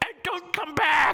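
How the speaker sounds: shrill, very high, drawn-out goblin yell. Voicing a goblin yelling after the departing party: yelling as a goblin. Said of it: "you hear him yell out".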